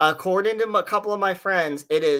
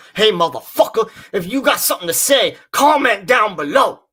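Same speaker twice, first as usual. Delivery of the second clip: loud, beefed-up, put-on macho voice; 4 semitones higher, 7 dB louder than usual. Speaker redoes the comment-down-below line for Sarah, in a more manly voice. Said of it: "let me do it more manlier".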